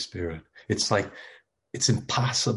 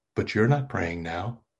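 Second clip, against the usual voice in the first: needling, snide, snarky tone. Retelling an interviewer's remark to an abbot: imitating a snarky remark. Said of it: "in kind of a snarky way".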